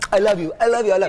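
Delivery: put-on Jamaican accent. Quoting what he says, in the speaker's best Jamaican accent. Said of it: "That's my best Jamaican accent".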